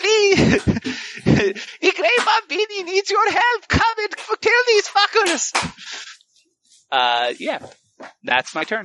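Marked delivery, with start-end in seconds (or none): 0.0-5.7 very high, tearful, sobbing, crying pleading. Playing a crying character begging for help in a fight: acted crying plea. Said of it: "I'm just fucking start crying".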